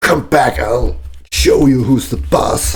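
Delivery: fierce, high, war-cry-like shout. As Tyra driving the alpha wolf away from the group, shout fiercely. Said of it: "she's just shouting at it fiercely".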